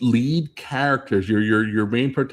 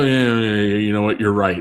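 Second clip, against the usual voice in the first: put-on begrudging, reluctant tone; 3 dB louder than usual. Retelling how the crew answers Spock: imitating begrudging agreement. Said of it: "they kind of begrudgingly go".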